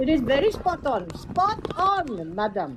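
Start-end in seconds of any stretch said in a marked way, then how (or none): 1.1-2.8 condescending, sing-song, patronizing voice. Talking about scammers, the speaker mimics one: imitating a patronizing scam caller. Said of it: "Mark, don't encourage me".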